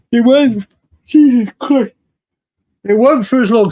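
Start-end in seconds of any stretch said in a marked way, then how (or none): 2.8-3.7 talking through a yawn. A speaker describing a uk reality show, yawning while talking. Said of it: "See, I'm yawning".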